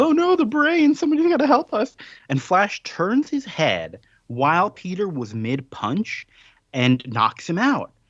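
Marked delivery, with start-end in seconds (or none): 0.0-2.0 high, loud panicked yelling. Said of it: "someone comes in and yells".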